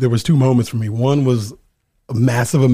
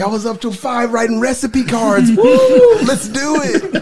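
mock very high, giddy, swooping, excited whoop; 12 semitones higher, 4 dB louder than usual. Replaying own past words at a seven am culinary class: imitating own past excitement. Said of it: "Why are you so excited?".

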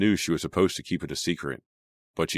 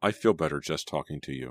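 ordinary delivery

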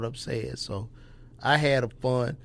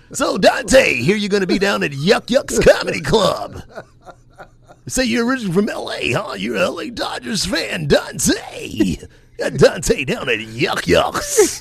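loud, booming radio announcer voice. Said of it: "I'm about to use this radio voice".

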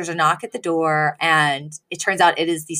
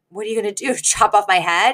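mock-joking tone, faster; 3 semitones higher than usual. Retelling what a woman said to a man who hates being told no: retelling a joking remark. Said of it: "she kind of jokingly goes".

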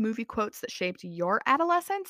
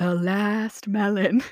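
silly, put-on cartoon dodo bird voice; 5 dB louder than usual. Retelling a family story, one of the dodo birds speaks, dodo bird accent. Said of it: "I wasn't going to do the accent, but I did".

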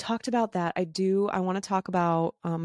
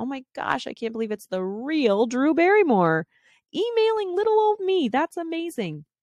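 put-on heavy sarcasm, high and swooping; 8 semitones higher than usual. Retelling a reply to an email scammer, heavily sarcastic. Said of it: "heavily sarcastic".

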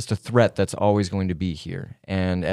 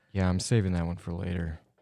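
creepy deadpan delivery in character, quieter; 7 dB quieter than usual. Answering in character with a creepy stare: creepy in-character line. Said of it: "no blinking stared when he said that".

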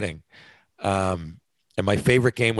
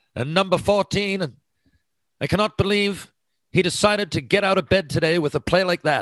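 very high, put-on British commentator voice with British accent; 10 semitones higher than usual. Imitating a British announcer calling a play: British announcer accent. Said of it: "In their British accent".

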